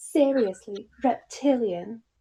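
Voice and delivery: bad fake British accent. Riffing on a Hermione quote, in a bad British accent. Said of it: "I should do a British accent".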